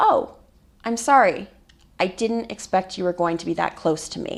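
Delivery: plain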